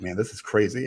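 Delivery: ordinary delivery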